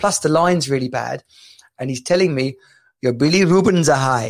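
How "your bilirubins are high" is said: imitated, loose sort of Indian accent. Retelling a caller on a bad phone line, in a sort of Indian accent. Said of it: "I got a sort of Indian-y accent".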